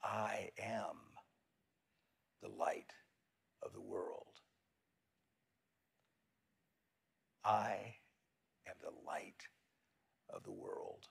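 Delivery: whispering. Leading listeners to repeat an affirmation to themselves, the speaker is whispering. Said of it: "Whisper to yourself this".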